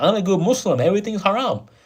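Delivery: fake-polite customer service voice. Mocking people who pretend to be perfect Muslims, the speaker does a mocking customer service voice. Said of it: "They got like customer service voice".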